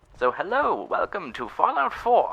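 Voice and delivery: put-on very high, filtered, old-time vintage radio sound. Opening an episode playing Fallout 4, in an old radio effect voice. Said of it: "The old radio effect on my voice".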